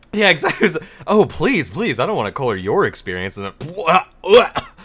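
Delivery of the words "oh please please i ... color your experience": snobby, fake-polite, condescending waiter voice. Retelling the waiter's reply when asked about the steak: imitating a snobby waiter. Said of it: "I seriously got snobbed".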